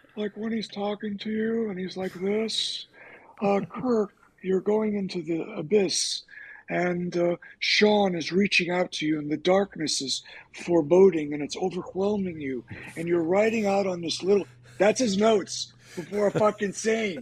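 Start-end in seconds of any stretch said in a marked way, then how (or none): 3.4-12.7 put-on froggy puppet voice. Acting out how a director talks to you before a scene, Kermit the Frog voice. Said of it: "he sounds like Kermit the Frog".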